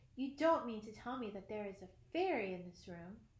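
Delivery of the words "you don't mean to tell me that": ordinary delivery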